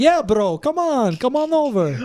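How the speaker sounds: put-on Lebanese accent, high, unhurried and drawn out. Showing how the speaker hears their lebanese cousins talk; lebanese cousins accent impression. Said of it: "how I hear like my Lebanese cousins talk".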